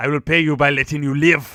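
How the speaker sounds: put-on French accent. Voicing the bad guy's line on request: French accent. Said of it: "Give me that in a French accent".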